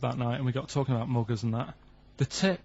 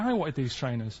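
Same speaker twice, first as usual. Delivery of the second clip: usual speaking voice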